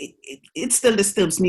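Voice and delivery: faltering, halting stutter, repeating the first word. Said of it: "You can probably tell I'm stuttering now".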